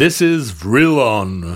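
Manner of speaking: put-on super spooky broadcast voice. Retelling a strange voice that interrupted a TV broadcast: imitating a super spooky voice. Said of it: "very super spooky voice".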